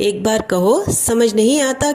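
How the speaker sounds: pitch lifts on आता, question-like rising tone. Teaching a Hindi phrase, saying it with rising question intonation. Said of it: "க்வேஷ்சன் टोनல".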